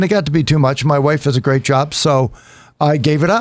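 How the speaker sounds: ordinary talk, nothing marked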